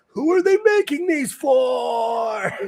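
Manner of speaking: mock shriek, very high and drawn out. Acting out what you always scream about skinny jeans: imitating own screaming. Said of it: "the guy who is screaming".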